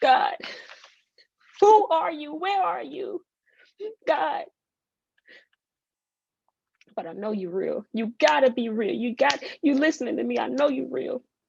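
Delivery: high, tearful, weeping, pleading voice. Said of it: "This is what it looked like".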